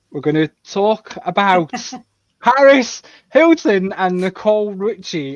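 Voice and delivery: thrilled, very loud, high, excited delivery. Asked to present this week's topic, announcing it in an excited voice. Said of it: "can you hear the excitement in my voice?".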